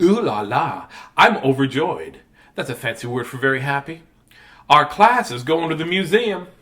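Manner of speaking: slow southern lady drawl. Reading a picture book aloud to kids, voicing the class character: southern lady voice. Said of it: "talking like a southern lady".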